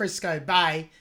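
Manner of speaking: low, natural Aussie accent. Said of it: "That's in my Aussie accent".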